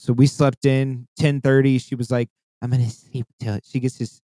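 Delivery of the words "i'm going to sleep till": put-on quiet, little, soft voice. Retelling how a friend said she'd sleep late: imitating a quiet little soft voice. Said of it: "this quiet little soft voice".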